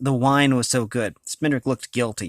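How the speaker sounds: ordinary delivery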